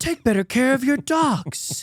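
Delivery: put-on very high, furious, angry yelling. Acting out what would be screamed at a woman who said slow down: acting out screaming at someone. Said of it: "the way I would have at that woman".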